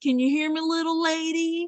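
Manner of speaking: condescending, patronizing cowboy voice, very high-pitched. Retelling how the loudmouth cowboy talks down to her: imitating a patronizing cowboy. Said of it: "so patronizing".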